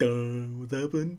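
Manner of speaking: soft, dim-witted, derpy, dopey voice. Describing a comic panel, voicing two kings looking down, derpy voice. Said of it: "how derpy those two kings look".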